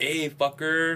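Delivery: acted southern California guy voice.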